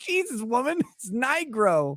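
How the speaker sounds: exasperated, fed-up, slow and high-pitched. Retelling how his dad corrected a nurse: imitating an exasperated dad. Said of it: "He exasperatedly says".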